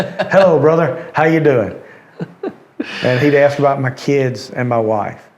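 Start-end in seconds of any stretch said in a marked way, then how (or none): 0.0-1.8 big, booming voice, pitched up. Speaker recalling a college friend's weekly phone calls, Mickey Garnto's big voice. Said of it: "I can hear his big voice".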